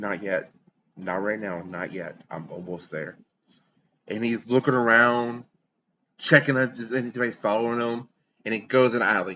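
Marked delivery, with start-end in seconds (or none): 0.0-3.2 hushed, audible stage whisper muttered under the breath. Narrator voices a man pulling himself together, half-whispering to himself. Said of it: "he whispers to himself that you can hear".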